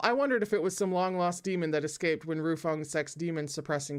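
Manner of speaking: usual speaking voice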